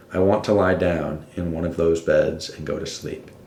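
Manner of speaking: normal talking voice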